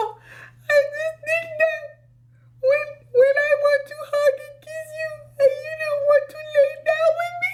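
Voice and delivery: very high, sobbing, crying voice. Retelling someone who was crying and irritated her: imitating a very high crying voice. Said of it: "His voice was so high".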